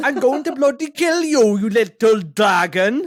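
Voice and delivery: very loud, high, slow yell in a Welsh accent. Doing a threatening line as a Welsh speaker, in a Welsh accent. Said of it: "as Welsh".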